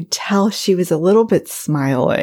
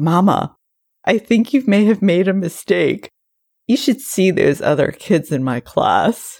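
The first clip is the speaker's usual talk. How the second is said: very serious, earnest tone. A mother retells her child's remark to her, imitating a very serious tone. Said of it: "in a very serious tone of voice".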